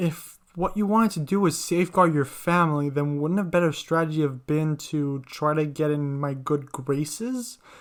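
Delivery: plain reading voice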